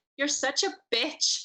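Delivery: sweet, cute, high-pitched Scottish accent. After someone suggests trying lines in accents, speak in a cute Scottish accent. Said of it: "In a cute Scottish accent".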